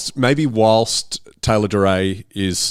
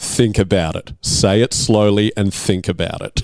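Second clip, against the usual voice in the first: plain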